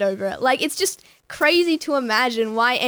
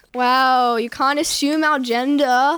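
slow, snide, sarcastic drawl, acted out. Retelling what someone said after slamming the bathroom door open, imitating sarcasm. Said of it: "said like sarcastically".

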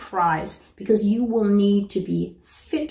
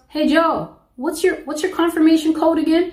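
acted, high, raised calling-out yell; 8 semitones higher, 4 dB louder than usual. Retelling a supervisor calling to a cashier: imitating someone yelling. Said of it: "the supervisor yells".

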